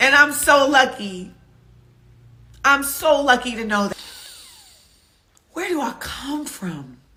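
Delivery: crying while speaking. Speaking about where one comes from, crying while talking. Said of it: "I'm not crying right now because I'm sad".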